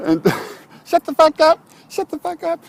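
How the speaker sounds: very high, tiny, squeaky little voice.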